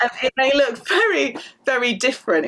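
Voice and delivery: exaggerated English accent, high-pitched and loud.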